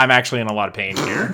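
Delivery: dry, matter-of-fact, understated deadpan delivery. Retelling Tom's reply when asked if he's okay, imitating Tom's deadpan. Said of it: "It's deadpan as".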